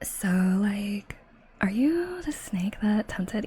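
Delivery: put-on valley girl accent. Reading a story aloud as chat demanded, in a Valley Girl accent. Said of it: "You forced me to do a Valley Girl accent".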